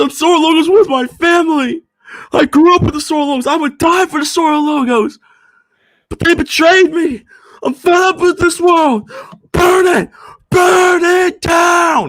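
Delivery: very high, sobbing, crying outburst. Retelling a scene where Rentaro cries: imitating Rentaro crying. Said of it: "Rentaro is crying".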